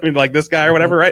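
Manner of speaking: ordinary delivery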